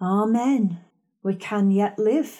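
ordinary talk

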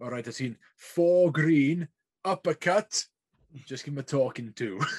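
put-on thick Welsh accent laid on. Retelling what a rugby linesman told the referee, in a really strong welsh accent. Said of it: "In this really strong like Welsh accent".

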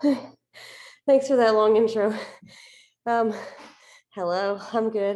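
out of breath. Co-host greets the host just after running up the stairs, out of breath. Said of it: "I'm a little winded".

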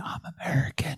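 hushed whisper, barely audible. Retelling a remark to the cashier: retelling a whisper. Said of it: "I just whispered to the cashier".

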